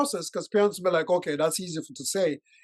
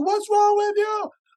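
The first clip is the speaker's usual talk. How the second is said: mock, very high, shrill, sassy teenage yell; 5 dB louder than usual. Acting out a fourteen-year-old yelling back at a parent: imitating a teenager yelling. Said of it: "they're gonna yell at you".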